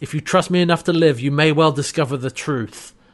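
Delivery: ordinary talk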